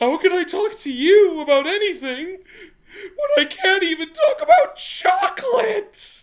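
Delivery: very high, slow sobbing through gasps. Retelling what a crying student said between sobs: imitating gasping sobs. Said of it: "in his gasping sobs going".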